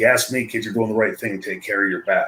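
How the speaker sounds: confiding, hushed, secretive stage half-whisper. Retelling what a colleague secretly told him: imitating someone half-whispering. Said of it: "and he whispered".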